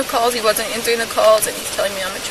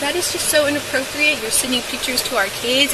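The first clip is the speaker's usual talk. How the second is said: ordinary talk, nothing marked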